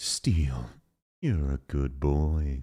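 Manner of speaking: very low, very slow, deep, sultry, drawn-out seductive voice. Showing how they talk to Steel, in a deep, sexy voice. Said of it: "I do it in a deep, sexy voice".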